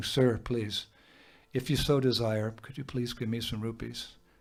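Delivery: acted humble pleading, mock begging manner. Describing a beggar in india asking for rupees, imitating humble begging. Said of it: "he's begging".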